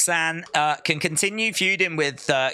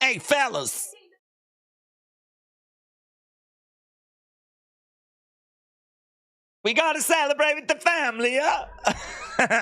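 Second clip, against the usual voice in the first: put-on Italian New York accent, pitched very high; 10 semitones higher than usual. Describing the girl arriving with the family, speaker imitates her: Italian New York accent. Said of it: "It's that like Italian New York accent".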